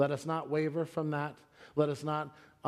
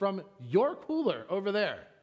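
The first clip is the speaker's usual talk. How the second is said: put-on angry tone, higher; 5 semitones higher than usual. Retelling a reply to the store manager: imitating his own angry tone. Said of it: "the tone that I was taking".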